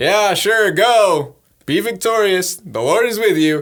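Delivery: slow, loud, heavy, laid-on mock sarcastic drawl. Speaker pictures him replying to the blessing, imitating him mock-sarcastic. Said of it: "with the most sarcastic".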